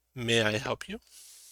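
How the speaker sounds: quiet, soft, hushed voice. Game master voicing a drow at a massage room greeting visitors, soft, hushed voice. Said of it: "speaks in soft, hushed voice".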